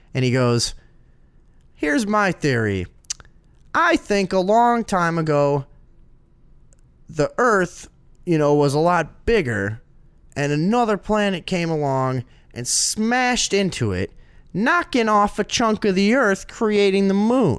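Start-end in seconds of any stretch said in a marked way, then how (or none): 1.8-17.6 put-on comical, high-pitched kid voice. Retelling what a classmate said in class: imitating a classmate's high-pitched voice. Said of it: "he had this funny, high-pitched voice".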